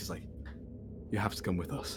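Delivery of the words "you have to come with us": quiet, soft, secretive, hushed half-whisper. A character speaks so only Otto and Mimi can hear, half-whispering. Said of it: "like he whispers".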